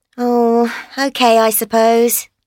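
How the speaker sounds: glum, unhappy, dejected, sounding down. In a dialogue, [name] answers Daniel asking how she is, glum and unhappy. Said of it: "You don't sound very happy".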